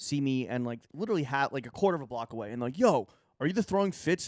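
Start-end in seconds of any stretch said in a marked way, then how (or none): 2.8-4.3 mock high shouted call, as from afar. Retelling two guys calling out from down the street: imitating guys yelling. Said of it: "so they yelled at you?".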